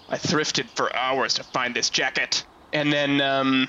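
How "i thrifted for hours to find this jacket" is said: mock muttering under breath, acted aside. Describing a game character facing a creature, the speaker acts out: imitating a mutter under breath. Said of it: "he just sort of mutters under his breath sort of like".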